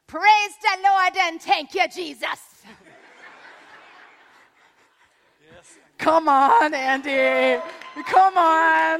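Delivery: put-on loud, broad Jamaican accent, laid on thick. Retelling Olga calling out from the back row at church, thick Jamaican accent. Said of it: "in her thick Jamaican accent".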